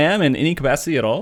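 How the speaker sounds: plain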